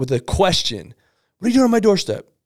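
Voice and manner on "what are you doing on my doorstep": mock high-pitched aggressive yelling. Acting out a customer at the doorstep: imitating a yelling customer. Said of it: "if they come at you".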